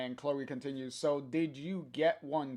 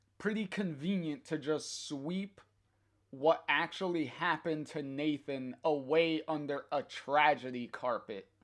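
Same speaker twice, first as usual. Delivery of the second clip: ordinary delivery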